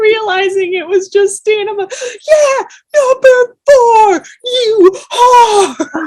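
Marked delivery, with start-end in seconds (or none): 2.3-6.1 rowdy, loud, high, drawn-out cheering scream. Retelling cheering for a friend's number: retelling a scream. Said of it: "I screamed".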